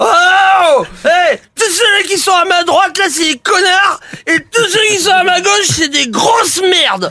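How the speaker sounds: put-on very drunk-sounding, high-pitched ranting voice. Telling a joke about a wasted man entering a bar: wasted man's voice. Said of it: "il est défoncé".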